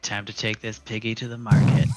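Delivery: muttered aside, meant for no one. Voicing a character who mutters while attacking: muttering under his breath. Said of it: "so under his breath, Kyriakos is gonna be like".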